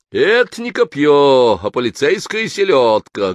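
loud, high, mocking jeering shout. Vizigin interrupts Khanov's stage monologue, loud mocking shout. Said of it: "громко, насмешливым тоном крикнул Визигин".

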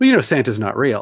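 ordinary talk

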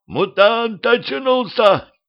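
very high shouted yell. A one-eyed cyclops recoils as Maria opens her eyes, shouting. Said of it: "закричал".

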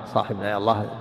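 ordinary talk

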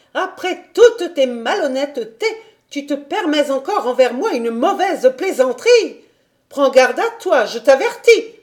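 furious, loud angry shout with voice climbing. The lady, answered only by a meow, shouting, voice rising. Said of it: "cria-t-elle en haussant de plus en plus la voix".

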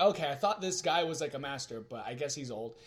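ordinary delivery

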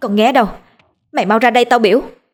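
high, frightened, quavering, trembling voice. Nga, scared by the scene before her, orders someone to come out: frightened shout. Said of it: "Nga sợ hãi hét lên".

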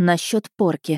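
ordinary delivery, nothing marked

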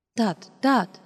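rushed, hasty and a little embarrassed. Reading a woman stopping another woman from using the phone, hasty, slightly embarrassed. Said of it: "сказала Ася поспешно, чуть смущенно".

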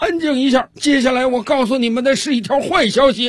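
drill sergeant voice, barked, very high pitch, very loud. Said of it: "训练军是接下来又继续说道".

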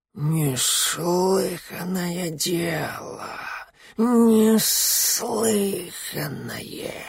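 put-on soft, high, decrepit old snake hissing voice. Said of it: "Полос прошипел".

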